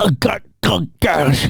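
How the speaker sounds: put-on mouth-full speech. Retelling a movie scene to friends: imitating talking with gun in mouth. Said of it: "Was that your impression with a gun?".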